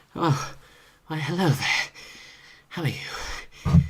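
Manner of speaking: very breathy voice, lots of air, pitch lifted. Speaker introducing the character voices, doing the happy peasant Asadar. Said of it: "is very breathy".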